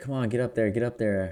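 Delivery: play-acted, urgent coach's shouting. Retelling the coach urging the speaker to move up: imitating a coach yelling. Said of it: "my coach is yelling".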